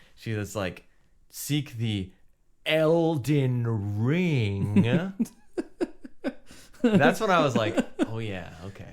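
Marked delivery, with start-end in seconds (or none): 2.7-5.1 heavy, dramatic stress on Elden Ring. Describing a soft-spoken game character, imitating Melina stressing 'Elden Ring'. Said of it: "they always go for it".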